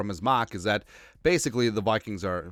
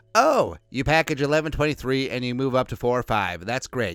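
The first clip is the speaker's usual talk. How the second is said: patronizing, condescending, know-it-all talking-down tone; 2 semitones higher than usual. Mocking the conventional thinking about trading up draft picks: imitating a condescending tone. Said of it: "cue condescending tone".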